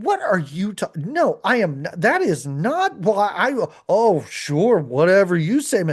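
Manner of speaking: snippy brush-off tone, drawn out. Retelling a scene, imitating a woman snapping back at him: imitating a snippy woman. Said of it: "she's equally snippy".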